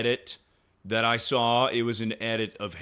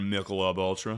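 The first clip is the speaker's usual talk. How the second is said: ordinary talk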